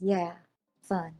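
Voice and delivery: muttering under breath. A player's character answers an ally calling it fun, muttering under breath. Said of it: "I will mutter under my breath".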